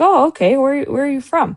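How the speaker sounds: put-on Israeli-accented speech. Retelling a talk with a woman about holidays, voice her reply in a thick Israeli accent. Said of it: "It's a thick Israeli accent".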